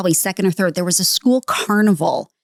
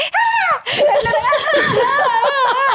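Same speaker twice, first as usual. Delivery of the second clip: very high, slow, drawn-out fake crying. Retelling how their dad hit the bed with a belt instead of them: fake crying out. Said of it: "I'm like fake crying".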